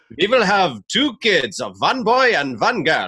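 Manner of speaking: bad German accent, slow, sing-song and swooping. Speaker quotes wife, who is German: butchered German accent. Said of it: "I'm going to butcher this German accent".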